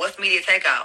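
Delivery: ordinary delivery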